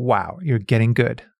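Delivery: normal talking voice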